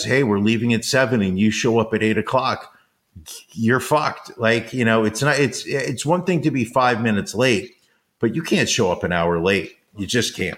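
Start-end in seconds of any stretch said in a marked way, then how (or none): none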